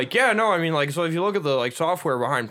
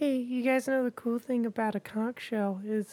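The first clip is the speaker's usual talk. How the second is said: small, mousy, high little voice; 5 semitones higher, 9 dB quieter than usual. Retelling a camp girl speaking into the mic with a conch shell: mousy Carl Wheezer voice. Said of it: "she says in the mic, very, like, mousy".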